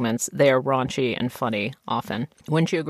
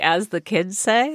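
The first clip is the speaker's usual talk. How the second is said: usual speaking voice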